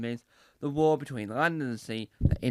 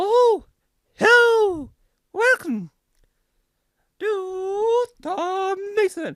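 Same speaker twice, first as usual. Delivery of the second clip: squeaky, high-pitched voice, slow delivery; 8 dB louder than usual. Opening a video on camera, speaker does a Mickey Mouse voice. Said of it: "That's my attempt of doing a Mickey Mouse impression".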